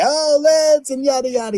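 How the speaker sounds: play-acted very high, loud scream. Retelling how a woman at a loud dance was screaming at him: imitating someone screaming. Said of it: "She's screaming at me".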